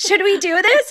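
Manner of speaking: play-acted eager excitement. Retelling how a son asked his brother to clean up: imitating someone excited. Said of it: "he said it like he was excited".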